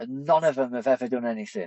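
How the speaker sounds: mock angry, fed-up, pissed-off griping tone. Retelling a fellow patrol member's complaint after being blown up: imitating someone pissed off. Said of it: "And he's pissed off".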